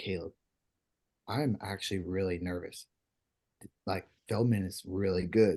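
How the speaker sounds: play-acted serious, sober, low, confiding tone. Retelling what a teammate said while walking to the Nest: imitating Tate, all serious. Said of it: "He looks at me, like, all serious".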